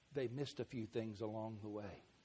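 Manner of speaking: very quiet, hushed, low voice under the breath. Making an aside about Dad and Mom they shouldn't hear, in a lowered voice. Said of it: "I'll lower my voice".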